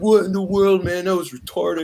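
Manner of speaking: put-on annoyed, upset, high, mad outburst. Retelling how older cousins reacted to the film: imitating mad, upset cousins. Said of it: "they're all, like, mad and upset".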